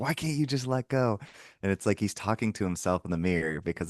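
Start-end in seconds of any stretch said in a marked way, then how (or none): 0.0-1.2 mock high, pitched-up, loud screaming. Retelling a movie character's speech to the guy: imitating someone screaming. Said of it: "he's screaming at him".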